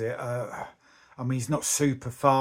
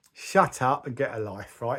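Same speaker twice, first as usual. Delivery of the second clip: usual speaking voice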